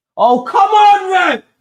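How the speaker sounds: very loud, very slow, high drawn-out yell. Watching the Brentford match, reacting to another free kick call, shouting. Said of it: "sorry for shouting".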